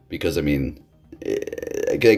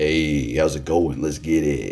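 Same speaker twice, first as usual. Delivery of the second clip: deliberately deeper, lower-pitched voice; 2 semitones lower than usual. Showing how much deeper the voice can go: deliberately deeper voice. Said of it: "I can go deeper with it".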